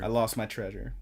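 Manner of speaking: plain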